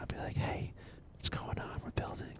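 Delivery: quiet whispering. Showing how they answer chat late at night: whispering. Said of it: "I'll whisper if you ever catch me on at night".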